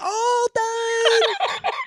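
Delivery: loud, very high exaggerated voice. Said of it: "lean into her face".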